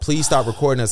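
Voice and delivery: ordinary talk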